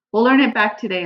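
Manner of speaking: plain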